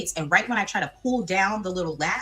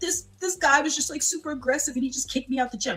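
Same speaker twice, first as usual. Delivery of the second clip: play-acted high, choked crying, words barely getting out; 7 semitones higher than usual. Retelling crying to the security guard after being kicked out of the gym, imitating crying. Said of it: "just crying. Can't even get the words out".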